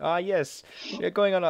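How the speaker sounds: poor fake Italian accent. Joking with a friend, voice what an imagined figure might say, in a bad italian accent. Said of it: "really offensive Italian accent that isn't even very good".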